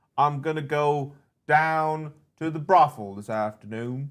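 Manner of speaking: Louisiana Southern accent. On a stream, a co-host urges him to keep talking, Louisiana Southern accent. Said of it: "It's like being in Louisiana right now".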